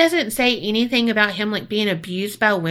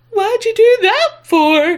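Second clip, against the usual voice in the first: very high, loud, scared yelp; 12 semitones higher, 6 dB louder than usual. Imitating the Cowardly Lion after he gets booped: Cowardly Lion voice. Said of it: "legit how he sounded".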